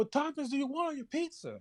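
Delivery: play-acted very high, swooping, hollered scream. Retelling ordering pizza, the speaker imitates the people in the back screaming. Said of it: "they like they screaming back".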